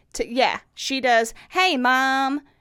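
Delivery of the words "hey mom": put-on Tennessee Southern twang accent. Imitating a daughter greeting her mother: imitating a southern twang. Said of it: "my daughter is very Southern to me".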